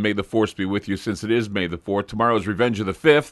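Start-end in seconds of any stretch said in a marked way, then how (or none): none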